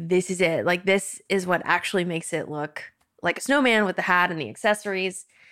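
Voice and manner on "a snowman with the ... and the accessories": ordinary talk, nothing marked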